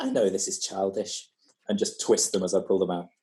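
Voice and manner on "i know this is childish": hushed, quiet half-whisper. Playing a character leaning in to a captive: half-whispering. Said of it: "I just whisper to him and say".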